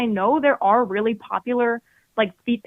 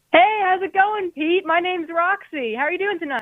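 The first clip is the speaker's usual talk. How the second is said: happy, upbeat, cheerful, pitched-up voice; 7 semitones higher than usual. Calling in and introducing yourself for the first time: happy. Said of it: "you sound happy".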